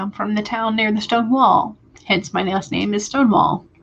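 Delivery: ordinary talk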